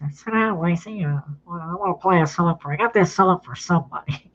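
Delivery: put-on nasal voice. Retelling what the producer said in his office: Billy Sherrill's nasal voice. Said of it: "his nasal voice".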